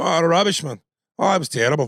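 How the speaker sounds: put-on poor Scottish accent. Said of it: "I don't do a great Scots accent".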